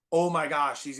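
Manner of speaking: plain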